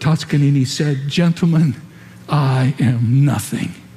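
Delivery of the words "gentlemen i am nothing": intense, fiercely enunciated, crisp whisper. Retelling the conductor addressing the orchestra, in a fiercely enunciated whisper. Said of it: "in a fiercely enunciated whisper".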